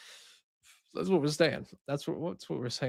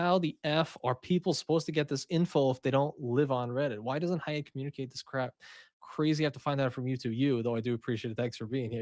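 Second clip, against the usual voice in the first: usual speaking voice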